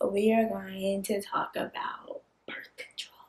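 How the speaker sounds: hushed whisper. Introducing today's video topic to viewers, whispering. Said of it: "Why are you whispering?".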